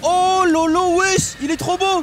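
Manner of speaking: loud, high-pitched, hyped outburst.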